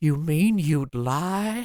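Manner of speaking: tiny, shrunken, very slow, drawn-out voice. Describing a scene from a show, the speaker quotes Bernard, in a tiny voice. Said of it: "in the tiniest voice you can imagine".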